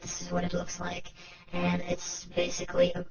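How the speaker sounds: voice run through a robotic filter.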